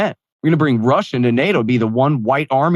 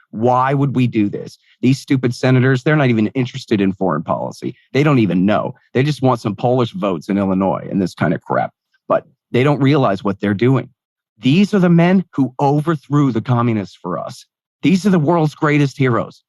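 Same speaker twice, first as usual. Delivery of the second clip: normal talking voice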